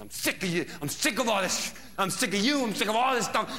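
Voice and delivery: put-on high-pitched, relentless, nonstop yelling. Retelling a fight, the speaker quotes a woman who won't stop: retelling her yelling. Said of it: "she won't stop yelling".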